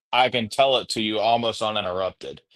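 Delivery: normal talking voice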